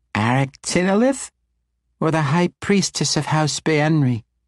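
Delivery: put-on teasing, squeaky, high little-child baby voice. A tiny child teases the Archmage, in a squeaky baby voice. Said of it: "teased in her squeaky baby voice".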